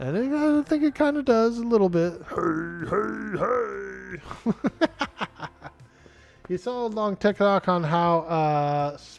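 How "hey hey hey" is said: rough, creaky orc voice, each "hey" drawn out. Speaker shows off the orc voice people compare to Fat Albert: orc voice like Fat Albert. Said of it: "my orc voice sounds like Fat Albert".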